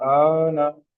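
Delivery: vowel drawn out long. Showing learners how far to draw out the vowel: long drawn-out vowel. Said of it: "آواز کتنی لمبی کھینچ رہا ہوں پہلے کے مقابلے میں".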